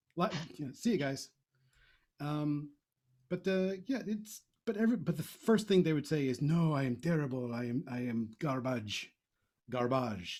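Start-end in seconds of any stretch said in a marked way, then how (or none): 6.4-10.4 slow, drawn-out, fake French accent. Speaker quotes what others would say first, in a put-on French accent. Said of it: "That is the that's my um, French accent".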